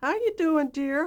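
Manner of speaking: very high-pitched phone voice, a bit loud. Retelling a phone call with the head of CBS, imitating Mike Dan's high voice. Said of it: "He had a uh, kind of a high voice".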